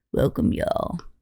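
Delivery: deep, low radio host voice. Imitating the co-host's greeting: imitating Chandler's deep radio voice. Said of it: "Radio voice?".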